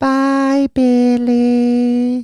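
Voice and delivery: very high, squeaky creature voice, stretched out. Retelling the movie moment where Gizmo says goodbye to Billy, Gizmo voice. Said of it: "do animals and creatures better than humans".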